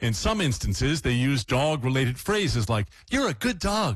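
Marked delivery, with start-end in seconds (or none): 3.1-4.0 put-on high-pitched baby talk. Demonstrating how people spoke to dogs in tests, high-pitched voice to a dog. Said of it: "I can't get high enough".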